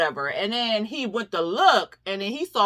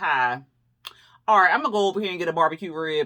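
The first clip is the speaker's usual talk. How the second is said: dry, rude, offhand, unwelcoming, rattled off quickly; 4 semitones lower than usual. Retelling how the middle son, James, greeted Nova, imitating a dry, rude tone. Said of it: "he was just real dry".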